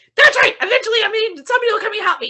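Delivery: shrill, very high-pitched screaming. Retelling being stuck in an elevator, calling for help: retelling a scream into phone. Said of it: "I'm screaming into it".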